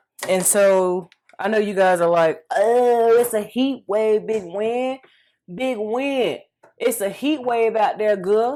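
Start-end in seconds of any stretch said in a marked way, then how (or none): 2.5-8.6 put-on Georgia accent, only half-managed. Voicing what viewers are thinking while mixing food: attempted Georgia accent. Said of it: "I'm trying to use my Georgia accent".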